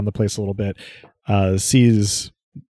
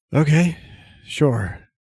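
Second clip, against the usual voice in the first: worn-out, draggled, can't-be-bothered voice, pitched up; 6 semitones higher than usual. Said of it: "a very sort of draggled voice".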